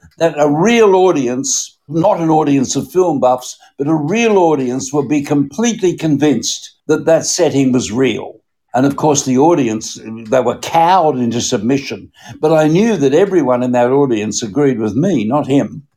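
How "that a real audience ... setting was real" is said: ordinary delivery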